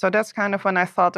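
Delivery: ordinary talk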